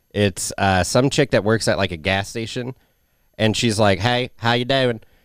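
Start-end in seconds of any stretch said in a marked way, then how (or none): 4.0-5.0 put-on Southern accent. Describing a gas station worker's online videos, imitating a Southern accent. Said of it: "It's a Southern accent".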